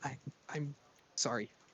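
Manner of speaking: timid, small, shy voice, stumbling on I. Asked whether he wants to talk now, [name] finally speaks: small, quiet voice. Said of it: "small, quiet voice speak out".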